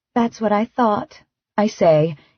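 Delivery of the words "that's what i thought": soft, gentle, playful teasing voice. Reading a story aloud, a character answering her partner: soft teasing voice. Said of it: "in a soft, teasing voice".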